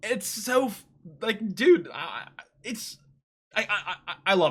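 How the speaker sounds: very slow, halting stuttering gush. Praising an aspect of the show, stuttering a lot. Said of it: "I'm stuttering a lot".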